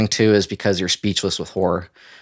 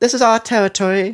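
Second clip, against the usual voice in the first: put-on very high, squeaky voice with a British accent; 13 semitones higher than usual. Voicing a talking roach in a story, the narrator uses a high squeaky british voice. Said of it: "It's high and squeaky voice".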